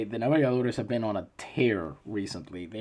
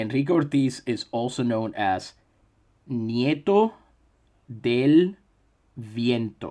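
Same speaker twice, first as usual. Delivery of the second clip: each word slowly and carefully enunciated, with breaks. Saying a name for listeners as clearly as he can: slow, careful enunciation. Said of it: "say it as slowly and enunciatorily as I can".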